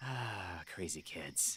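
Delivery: muttering grumpily. Leaving the kids be before a show: grumbling.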